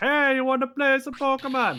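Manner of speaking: put-on Jamaican accent. Retelling a joke someone made about Pokemon: Jamaican accent. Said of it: "Pokemon just sounds like a Jamaican".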